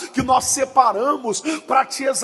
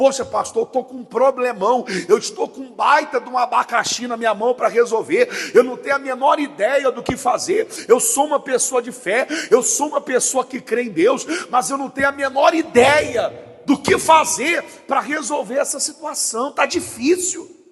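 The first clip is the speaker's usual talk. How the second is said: ordinary talk, nothing marked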